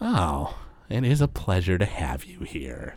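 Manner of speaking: smirking, pleased character voice. Voicing a spectral figure greeting the players: smirking Saturn Volo voice. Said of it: "Saturn Volo kinda smirks at you guys and goes".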